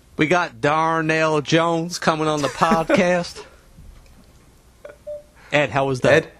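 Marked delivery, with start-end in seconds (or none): 0.2-3.5 put-on Southern accent. Doing a requested impression of an upcoming guest: Darnell Jones impression in Southern accent. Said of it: "your best Darnell Jones in a Southern accent".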